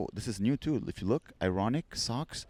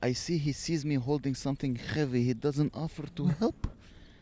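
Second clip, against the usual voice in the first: put-on, imitated Eastern European accent; 3 semitones higher than usual. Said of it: "they're gonna have Eastern European accent".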